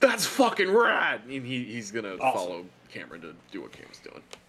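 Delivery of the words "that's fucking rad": very high, fired-up, enthusiastic excited burst. Voicing a character who has just perked up: reinvigorated, excited. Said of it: "that reinvigorates Grant a little bit".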